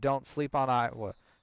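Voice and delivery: ordinary talk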